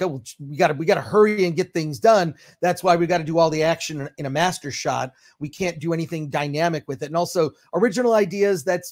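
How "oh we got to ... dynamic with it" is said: ordinary talk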